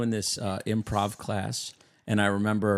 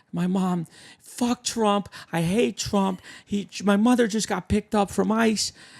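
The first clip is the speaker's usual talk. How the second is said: high, loud, frantic rant. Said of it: "She goes".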